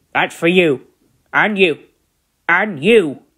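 sour, cross, irritated, put-out grumble. An engine shunting trucks about the yard speaks to them, cross. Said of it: "Gordon said crossly".

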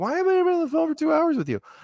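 bewildered tone. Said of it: "It's like".

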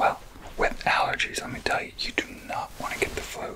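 soft whispered voice. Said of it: "And you did your first roleplay".

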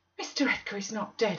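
said with a gasp. Narrator reads her reply to Zillah about Mr. Edgar, gasped. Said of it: "I gasped".

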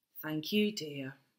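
weary, worn out, very quiet and low. Narrator reads a woman thanking a child who flung toys into the bathwater: wearily. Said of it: "said Mrs. Large wearily".

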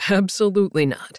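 plain

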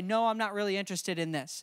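normal talking voice

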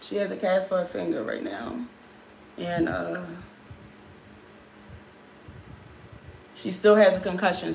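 fighting back crying. Describing her cast and concussion, the speaker is holding back tears. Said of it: "I'm trying not to cry".

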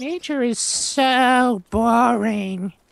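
very high, very slow character voice, stretching "so". Doing an impression of the other player's game character. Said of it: "I just did an impression of your character".

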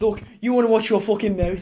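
put-on Birmingham Brummie accent. Trying out one regional accent after another, now attempt a put-on Birmingham accent.

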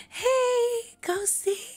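high, chirpy put-on accent. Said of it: "TikTok accent".

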